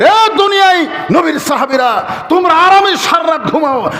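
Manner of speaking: crying out, a loud outcry.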